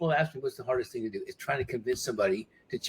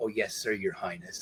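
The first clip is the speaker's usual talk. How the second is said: put-on muttered voice, lower and quieter; 5 semitones lower, 6 dB quieter than usual. Retelling what Michael said as the speaker walked by, imitating Michael muttering under his breath. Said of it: "under his breath".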